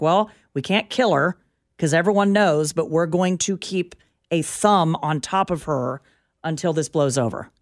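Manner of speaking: ordinary talk, nothing marked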